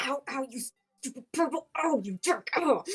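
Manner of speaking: forceful whisper-yelling under the breath. A wounded character, running, mutters at Shalius through the ether; whisper-yelling. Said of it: "like whisper yelling at Shalius".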